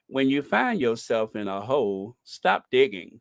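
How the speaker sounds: deep, low, dropped voice. Speaker comparing two of their impressions, doing a Morgan Freeman impression. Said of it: "I'm Morgan Freeman".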